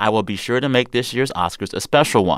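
plain

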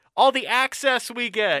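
shrill, very high, facetious sarcastic yell. Recounting someone on a bus yelling an answer to a question: retelling someone's yell. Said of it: "somebody yells".

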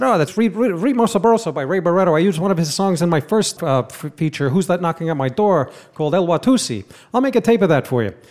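put-on voice, halting, with stammered restarts. Retelling what the director said on the Goodfellas set: Marty impression. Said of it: "That was a great impression".

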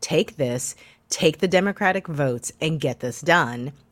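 ordinary talk, nothing marked

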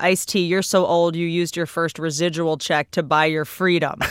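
normal talking voice

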